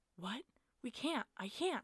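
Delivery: tearful, distraught, loud, drawn-out yell. Narrating Ty being asked for a knife to help a wounded girl: yelled. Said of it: "Ty yelled".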